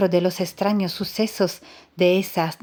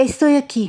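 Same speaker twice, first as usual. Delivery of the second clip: high, raised, quavering, shaken, trembling voice; 6 semitones higher, 5 dB louder than usual. Reading a story, someone answers a call in the ruins: trembling voice. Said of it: "respondió una voz temblorosa".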